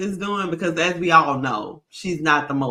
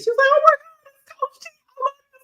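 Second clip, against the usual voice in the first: put-on very high, giddy, starstruck childlike gushing; 4 dB louder than usual. Retelling how a huge Steelers fan met Coach Tomlin, imitating someone like a little kid. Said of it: "she was just like a little kid".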